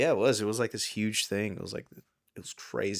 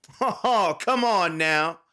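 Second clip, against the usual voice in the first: mock taunting announcer voice, higher and louder; 9 semitones higher, 9 dB louder than usual. Imitating the dance game announcer taunting a player who misses beats: imitating the DDR announcer taunting. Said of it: "He's always like".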